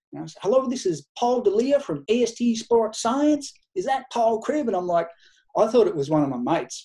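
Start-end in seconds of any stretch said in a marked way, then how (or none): 0.4-4.7 put-on broad, thick American accent, pitched up. Retell a phone call from the president of a company, imitating Paul D'Elia, thick American accent. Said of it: "it was the thick American accent".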